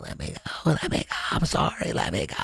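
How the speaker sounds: mock whispered, breathy pleading. Retelling being held in a headlock after practice: imitating own begging. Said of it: "I was begging and pleading for him to let me go".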